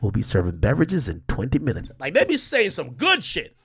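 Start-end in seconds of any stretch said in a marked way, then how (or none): 0.0-1.9 unbothered, relaxed, calm pilot voice. Imitating a pilot warning passengers of turbulence, mock relaxed pilot voice. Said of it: "they sound mad relaxed".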